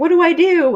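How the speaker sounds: high-pitched, helpless, panicked yell. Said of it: "They're standing there yelling".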